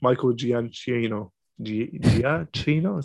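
words stretched out slowly. Pronouncing a composer's name: Jared Leto in House of Gucci voice. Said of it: "You sound like Jared Leto in House of Gucci".

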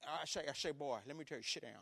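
blustery Southern cartoon rooster voice. Father recalls a talk with his son, in Foghorn Leghorn voice. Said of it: "kind of like, you know, Foghorn Leghorn".

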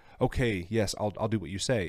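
ordinary delivery

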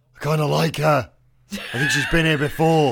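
stage whisper, loud. Commenting on her aside to a companion: loud stage whisper. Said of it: "I'm going to whisper, like, loudly to Ark".

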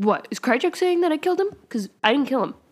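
acted defensive tone. Retelling a scene where Mulder answers his questioners, mock-defensive Mulder. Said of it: "gets all defensive".

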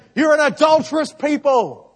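very loud, high, impassioned preaching cry. The speaker pictures James preaching and acts out his line: James preaching, raised voice. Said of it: "He's raising his voice".

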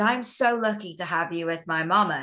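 normal talking voice

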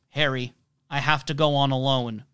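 put-on serious tone. Retelling a scene, quoting one character to another, in a put-on serious tone. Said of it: "in a slightly different, more serious tone".

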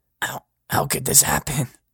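whispering. Reading a story aloud, the motel manager walking away: whispering. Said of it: "I hear him whisper".

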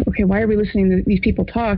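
ordinary talk

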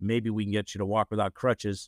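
plain

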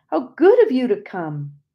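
glad, joyful outcry, high and loud. Narrator seeing their husband's favorite brother arrive and greeting him: crying out joyously. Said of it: "I cried out joyously".

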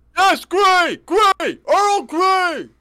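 yelling at top of lungs. Calling from the kitchen to confirm the earl grey tea, screaming like a lunatic. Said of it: "You don't have to scream like a lunatic".

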